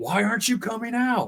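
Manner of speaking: very high-pitched, pissed-off, angry yell. Retelling losing patience in the forest: retelling a yell. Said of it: "I started yelling at 'em".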